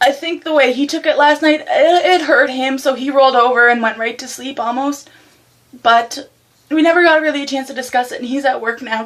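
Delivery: weepy, tearful, crying voice. Speaker opens up about something emotional, crying, teary voice. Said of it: "So I'm sorry if I'm crying".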